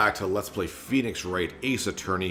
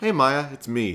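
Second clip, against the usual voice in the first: put-on higher girl voice; 6 semitones higher than usual. Acting out a phone call, greeting a friend who picks up, in a girl voice. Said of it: "Both my girl voices sound exactly the same".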